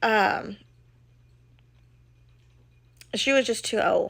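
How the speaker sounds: fighting back tears, trying not to cry. Telling how an old, ill dog had to be put down: fighting back tears. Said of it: "I'll try to say this without crying".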